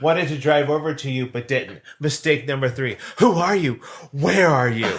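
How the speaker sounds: dramatic, theatrical reading. Reading a missed-connection post aloud: dramatic reading. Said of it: "That's my dramatic reading".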